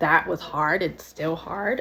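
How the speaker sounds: emotional voice close to breaking into tears. Telling of losing both grandmothers: getting emotional, holding back tears. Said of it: "I'm getting emotional, trying, you know, not to cry".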